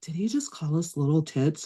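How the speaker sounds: soft, hushed, under-the-breath whisper. Retelling her sister whispering to her at a concert; retelling a whisper. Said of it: "my sister Kim whispers whispers to me".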